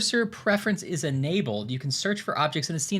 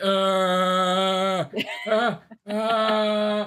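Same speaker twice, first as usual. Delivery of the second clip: movie monster voice with stretched, drawn-out uh; 4 semitones higher, 4 dB louder than usual. Acting out a newly invented creature roaming the house: Frankenstein's monster voice. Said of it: "he's like".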